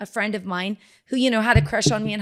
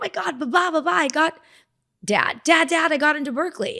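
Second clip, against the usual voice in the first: put-on thrilled, excited blurted delivery; 7 semitones higher than usual. Retelling running into the house to tell dad about getting in: imitating own past excitement. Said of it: "kinda shaking with excitement".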